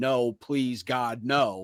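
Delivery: mock, very slow, stretched-out mild yelled plea. Recalling a meme from The Office: imitating Steve Carell yelling. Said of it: "Steve Carell just starts yelling".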